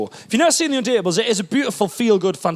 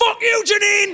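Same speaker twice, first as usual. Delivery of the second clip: put-on, very high, furious outburst. Retelling their reaction to a tv show, imitating a furious outburst. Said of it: "going mad".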